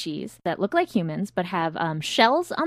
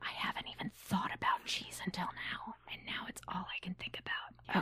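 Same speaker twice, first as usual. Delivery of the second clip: soft, hushed whisper. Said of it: "we should probably whisper".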